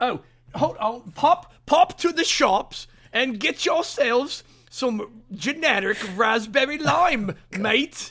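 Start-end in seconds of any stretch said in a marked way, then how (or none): 1.1-8.1 put-on British accent, very slow, drawn, pitched high. Repeating a phrase after being asked to say it in a british accent. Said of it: "do it in a British accent".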